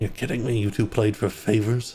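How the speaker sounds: exasperated, disbelieving sigh. Voicing a character who learns two others played dice for favors: sighing in disbelief. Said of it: "He sighs".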